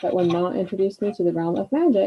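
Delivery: plain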